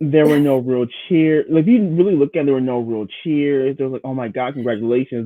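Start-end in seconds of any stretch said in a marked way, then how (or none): none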